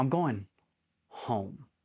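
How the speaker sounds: put-on deadpan delivery, dead straight. Speaker retells a man's reply while loading his rifle, imitating a deadpan delivery. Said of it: "he just deadpan looks at me and goes".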